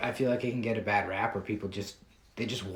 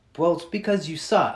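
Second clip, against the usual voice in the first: sweet, falsely courteous tone, pitched up; 8 semitones higher, 8 dB louder than usual. Retelling how Ryan answers the speaker's explanation, imitating Ryan's mock politeness. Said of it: "he really politely goes".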